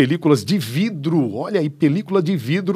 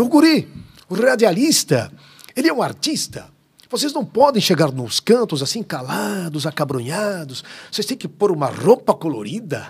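put-on southern Brazilian gaúcho accent; 2 semitones higher than usual. Speaker quotes a man passionate about radio advising broadcasters, imitating a gaúcho accent. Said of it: "E ele com aquele sotaque gaúcho".

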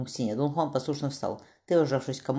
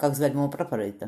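plain reading voice

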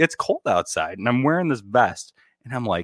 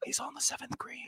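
hushed, quiet, whispered announcer-style commentary voice; 17 dB quieter than usual. Playing a golf announcer commenting on a shot: whispered golf announcer voice. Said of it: "do you usually whisper?".

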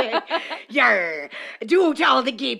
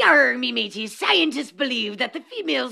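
put-on pirate voice. Riffing on a comedy bit about a pirate, a performer speaks in a pirate voice. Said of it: "do it in a pirate voice".

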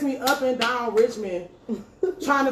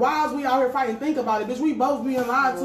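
plain

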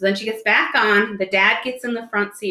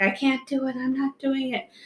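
put-on girl's voice, high, soft, sobbing, tearful; 5 semitones higher, 5 dB quieter than usual. Retelling a story about a ride, voicing a girl, imitating her crying. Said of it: "just starts crying like".

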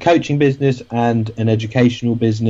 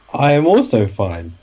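mock sassy tone with a pause. Answering a greeting in the show's running joke: mock sassy tone with a pause. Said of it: "just the right amount of pause and the right amount of sass".

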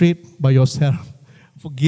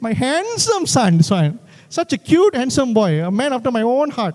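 doting motherly voice, pitched up; 7 semitones higher than usual. Imitating his mom praising her son: Auntie Ranjini impression. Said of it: "that was my impression of Auntie Jean, Auntie Ranjini".

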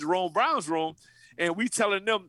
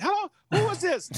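squeaky voice pushed very high; 12 semitones higher than usual. Act out Jamel answering a call from the defense players, in Jamel Holloway's high voice. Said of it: "Jamel got a high screen voice".

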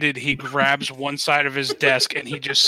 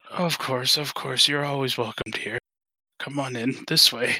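put-on very old voice, said quieter; 4 dB quieter than usual. The hunched old butler welcomes the visitors in; very old man, like in Up. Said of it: "Very old. Very, very old. Think like that old dude from the movie Up. Oh, right. Okay, yeah. And he's kind of hunched over and he's wearing a butler, / Very old. Very, very old. Think like that old du".

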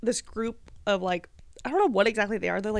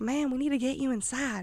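put-on rural country-style accent; 3 semitones higher than usual. Retelling a scene, speaker quotes a man speaking to an old lady, put-on country accent. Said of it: "they all have like country accents".

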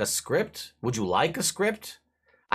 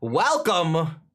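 put-on big, booming, loud, high boisterous voice; 5 semitones higher, 4 dB louder than usual. Retelling how he greets you when you arrive, imitating a very loud, boisterous welcome. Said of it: "Very loud and boisterous like he is".

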